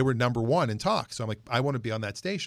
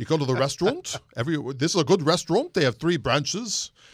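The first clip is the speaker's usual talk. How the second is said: put-on New York accent, radio announcer style; 4 semitones higher, 3 dB louder than usual. Showing how a weekend food show host from New York City talked, as a Merrill Shindler impression. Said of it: "He talked like this".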